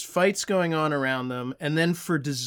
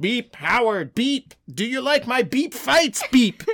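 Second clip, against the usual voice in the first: put-on beeping robot voice; 8 semitones higher, 4 dB louder than usual. Voicing Mojo trying to impress Howard: beeping Mojo voice. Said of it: "is that how Mojo talks at all?".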